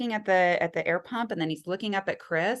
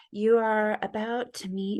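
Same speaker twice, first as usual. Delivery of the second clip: put-on, exaggeratedly soothing, relaxing voice; 2 semitones higher than usual. Retelling a meditation video played during labor: imitating a super relaxing voice. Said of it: "the super relaxing voice".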